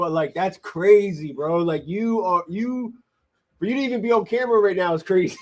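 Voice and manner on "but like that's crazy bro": giggly, amused, laughing through the words. Apologizing for laughing at a story about a couple: laughing while talking. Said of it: "sorry for laughing".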